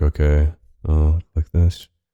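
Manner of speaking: low, breath-heavy, deadpan voice.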